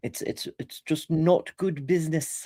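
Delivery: attempted English accent. Making a point, the speaker delivers it in an attempted english accent. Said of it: "that was a pretty good attempt at an English accent".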